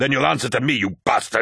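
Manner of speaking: sharp, snapped retort. Holding a knife to someone's neck after they refuse his command, snapped. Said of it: "snapped Torgadon".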